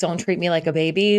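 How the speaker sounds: ordinary talk, nothing marked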